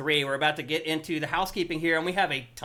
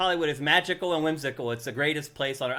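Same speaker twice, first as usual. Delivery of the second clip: plain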